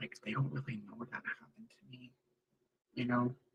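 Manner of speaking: discreet, soft, hushed talk. Speaker talking where the people they live with might hear, talking quietly. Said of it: "I'm talking quiet right now".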